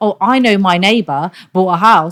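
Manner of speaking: put-on foolish voice. Ranting about uneducated property buyers, the speaker mimics one: mocking imitation of a fool. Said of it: "I'm just mimicking some fool".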